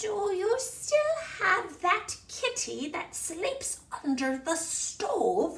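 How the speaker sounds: very high crackle of a little troll voice. Reading a troll's question aloud to a listener: high, crackly voice. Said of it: "he called out in a high, crackly voice".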